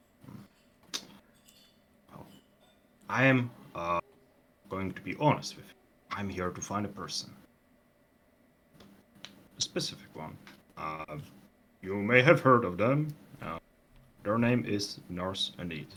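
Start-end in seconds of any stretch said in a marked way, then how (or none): 2.1-15.8 quiet, secretive, hushed character voice. Voicing a character asking a prisoner about someone: half-whispering in character. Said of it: "he's gonna whisper that, by the way".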